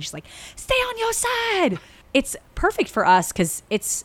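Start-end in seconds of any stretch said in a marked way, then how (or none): 0.6-1.8 put-on, very high, slow, drawn-out holler. Quoting a yell out a car window: imitating Glozell yelling. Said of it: "yells out the window to someone".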